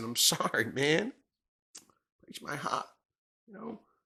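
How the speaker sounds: soft voice choked with emotion. Talking about a team's quarterback options, speaker apologizes: getting choked up. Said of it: "I'm getting all choked up".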